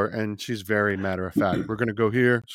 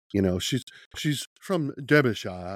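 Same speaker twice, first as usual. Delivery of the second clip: put-on British accent, chattering; 2 semitones higher than usual. Role-playing the head of a household introducing a guest, in a british accent. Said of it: "there's my British accent for you".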